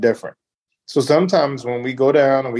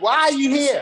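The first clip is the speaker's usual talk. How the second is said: mock harsh, brutal tone, higher pitch; 13 semitones higher than usual. Acting out the other speaker sizing up men: imitating someone being brutal. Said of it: "You sound like you're brutal".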